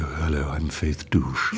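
deepened, slow woman's voice without falsetto. Retelling how he did a woman, in a deepened voice for a woman. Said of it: "when he did a woman, he usually deepened his voice. So unlike trying to do a sort of falsetto, he would go".

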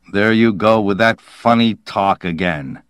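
ordinary delivery

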